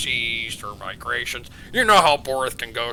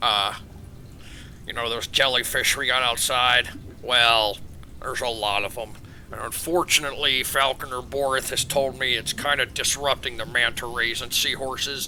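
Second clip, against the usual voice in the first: normal talking voice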